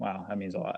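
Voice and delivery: ordinary talk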